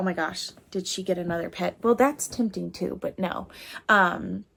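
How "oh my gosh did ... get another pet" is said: plain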